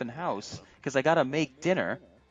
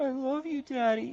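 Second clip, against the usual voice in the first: put-on, very high, slow, teary little girl's voice; 10 semitones higher than usual. Retelling a daughter's reaction after being picked up: imitating a crying child. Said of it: "She cries a little bit, and she goes".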